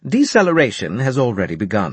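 ordinary delivery, nothing marked

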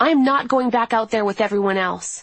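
loud shouting. Recounting a fight with a doctor over stomach pain, the speaker is retelling a yell. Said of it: "When I yelled".

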